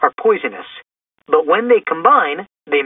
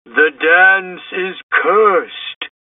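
eerie, ghostly moan, very slow and drawn out. A ghost appearing to Shaggy and Velma, eerie ghostly moan. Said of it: "moaned the ghost in an eerie voice".

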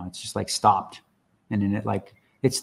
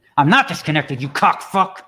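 outright shout, yelled, pitched high; 6 semitones higher than usual. Speaker at the computer, told he's disconnected, yelling. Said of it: "Both dogs heard me yell".

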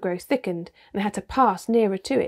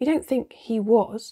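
ordinary delivery

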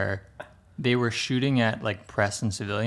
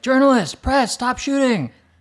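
very high, shrill, raised yelled-out call; 13 semitones higher, 8 dB louder than usual. Retelling journalists in a car under fire, imitating people yelling. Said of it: "they start yelling, like".

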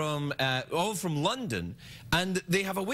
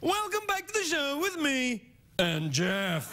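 very high British TV presenter intonation; 9 semitones higher than usual. Explaining how British people talk, the speaker demonstrates: British TV presenter style. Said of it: "if we were watching British television, I'd say".

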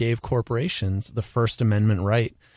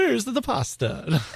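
put-on Italian accent, higher pitch; 12 semitones higher than usual. Joking about talking with hands, playing Italian: Mario voice. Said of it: "that's a Mario".

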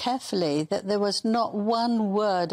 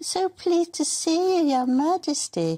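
put-on, mocking, very high squeaky voice; 9 semitones higher than usual. Retelling what she said to him after a phony curtsy, in a mocking squeaky voice. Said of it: "with a squeaky voice said".

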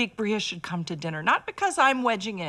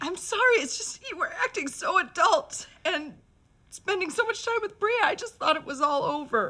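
crying and weeping while talking; 9 semitones higher than usual. Mother, caught crying by her son, explains herself: crying. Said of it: "why are you crying?".

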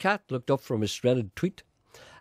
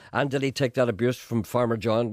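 ordinary talk, nothing marked

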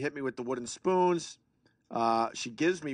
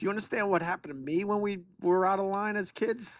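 put-on exasperated, frustrated tone, pitched up; 8 semitones higher than usual. Retelling what they say to their kid during timeout: retelling own frustrated words. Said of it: "so frustrated".

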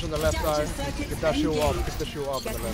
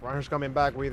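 usual speaking voice

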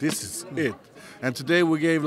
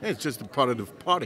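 usual speaking voice

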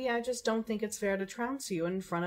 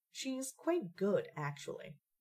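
slow, surprised delivery. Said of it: "don't sound too surprised there".

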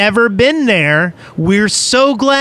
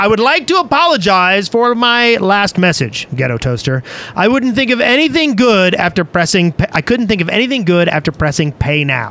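usual speaking voice

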